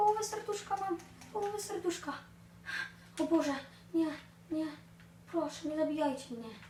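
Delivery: high-pitched, scared, pleading and panicked. Streamer playing a game is caught by a creeper, frightened and panicked. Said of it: "Ja się wystraszyłem!".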